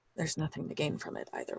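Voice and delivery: muttered under breath. Voicing a character who turns around and answers: muttered under his breath. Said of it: "under his breath".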